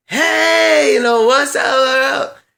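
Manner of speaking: very high, drawn-out, slow yell. Retelling how she called out from her car: imitating someone yelling out. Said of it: "she's driving and yells out like".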